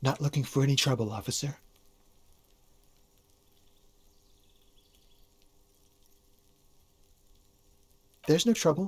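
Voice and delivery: discreet low voice. Answering an officer from a balcony: speaking in a lowered voice. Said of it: "I'm just speaking in a lowered voice".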